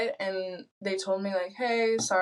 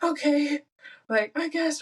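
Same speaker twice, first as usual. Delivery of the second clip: put-on high, wheezy, small-sounding voice; 7 semitones higher than usual. Retelling own reply to a friend urging a trip: imitating own wheezing. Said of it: "me, like, wheezing".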